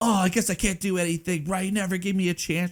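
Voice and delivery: mock, high-pitched yelling. Describing a guy yelling at his mom on the porch, imitating someone yelling. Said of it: "he's yelling at his mom on the porch".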